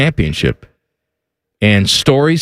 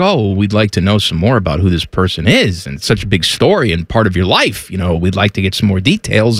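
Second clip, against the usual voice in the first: ordinary talk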